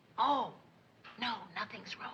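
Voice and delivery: hushed, very quiet whisper. [name] answering a question while trying not to wake Joe, whispering. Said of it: "you don't have to whisper".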